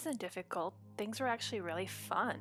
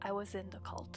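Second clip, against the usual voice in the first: very quiet whisper, lower and quieter; 4 semitones lower, 5 dB quieter than usual. Acting out what she said after leaning in close: very quiet whisper. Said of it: "she whispers very quietly".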